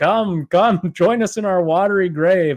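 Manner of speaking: put-on eerie underwater ghost voice. Retelling a comedian's joke about a Titanic ghost: imitating an underwater ghost voice. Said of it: "this underwater voice of this ghost".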